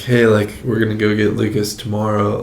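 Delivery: ordinary talk, nothing marked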